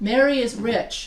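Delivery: ordinary delivery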